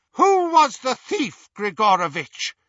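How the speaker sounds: icy, cold, very high-pitched voice. Interrogating a terrified man about a thief, high, cold voice. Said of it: "said the high, cold voice".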